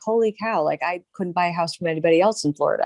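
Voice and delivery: plain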